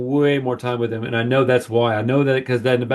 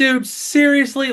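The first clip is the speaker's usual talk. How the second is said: loud, very high, shrill exasperated outburst; 13 semitones higher than usual. Retelling an outburst in the theater at a trailer: retelling a loud irritated outburst. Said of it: "Like, really loud".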